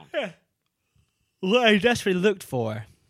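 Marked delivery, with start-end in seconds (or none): 1.4-2.8 words pulled out of shape while yawning. Talking about a remembered character, the speaker yawns mid-sentence: yawning while talking. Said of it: "Excuse me, I yawned".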